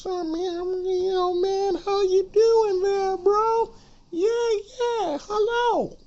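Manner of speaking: put-on very high teen-boy voice, taken slowly. Showing how a sixteen-year-old boy sounds: imitating a sixteen-year-old's voice. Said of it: "you got a voice like this".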